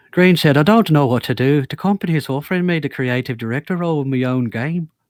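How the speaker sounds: put-on plain talk in an Irish accent. Reading a quote aloud for the group: Irish accent as Brendan Green. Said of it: "You do the best Irish accent in here".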